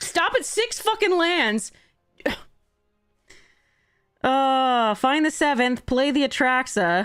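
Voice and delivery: mad, fed-up, frustrated, angry rant. Reacting to losing a card game, angry. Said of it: "I am so angry right now".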